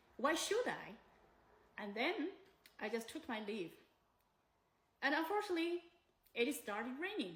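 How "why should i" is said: offhand, dismissive, flippant, can't-be-bothered tone. Retelling the landlady's reply to a request for money back: imitating a dismissive reply. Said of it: "Holding a coffee, standing with one leg".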